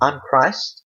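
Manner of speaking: normal talking voice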